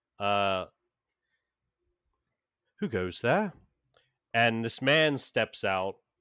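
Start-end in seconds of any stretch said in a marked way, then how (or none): 0.2-3.5 put-on, elderly-sounding British accent. Narrating a scene where a man in a library calls out, older British accent. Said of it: "this kind of older British accent".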